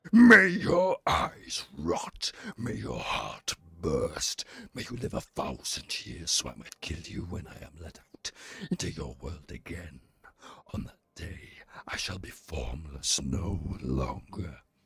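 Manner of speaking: very deep, rumbling, swooping undead dragon voice. A streamer reads aloud a letter from the slain undead dragon, deep dragon voice. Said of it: "it had that cadence of deep voice".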